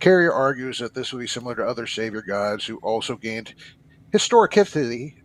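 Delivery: ordinary delivery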